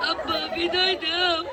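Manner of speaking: mock wailing, like a weeping bride.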